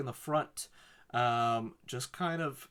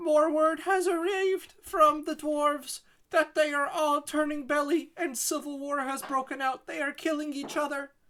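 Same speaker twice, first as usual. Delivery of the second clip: put-on very high, loud little-girl town crier scream; 4 dB louder than usual. A character on a soapbox shouts announcements as a town crier, screaming. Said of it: "she's screaming on this little soapbox stand announcements as a town crier".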